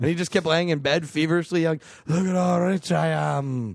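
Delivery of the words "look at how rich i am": put-on Scottish accent like a tired leprechaun. Imitating a Scottish person in a film: put-on Scottish accent like a tired leprechaun. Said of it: "tired leprechaun".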